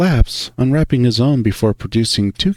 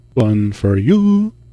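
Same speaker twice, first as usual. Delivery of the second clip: lilting, tuneful sing-song voice. Reading a character handing over a popsicle aloud: sing-song voice. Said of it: "he says in a sing-song voice".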